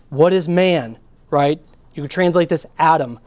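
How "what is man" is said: "man" given heavy stress. Reading a translated verse aloud, emphasizing a word on purpose; strong emphasis on man. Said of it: "I'm going to emphasize the word on purpose".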